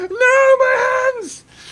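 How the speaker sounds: very high shrill screaming cry, "my" drawn out. Narrator acting out the stunned character collapsing to the floor, screaming. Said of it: "holding his hands like this and going".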